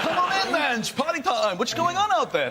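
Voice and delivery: put-on Dutch accent. Joking about hiding at the Dutch embassy, voicing someone there in a Dutch accent. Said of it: "That's a Dutch accent".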